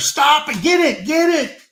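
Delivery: very high-pitched, loud yelling. Retelling yelling at someone to catch a creature: imitating own yelling. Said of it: "I'm yelling at her".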